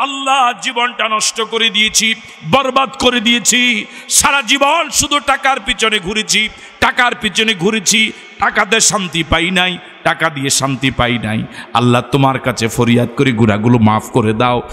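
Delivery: ordinary talk, nothing marked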